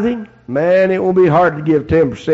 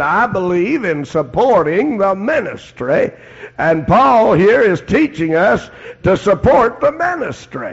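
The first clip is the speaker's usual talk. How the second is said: slow, drawn-out Texas drawl; 4 semitones higher than usual. Quoting J. Vernon McGee, in J. Vernon McGee's Texas drawl. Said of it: "in his Texas drawl".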